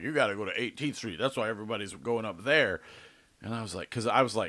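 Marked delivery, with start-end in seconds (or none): none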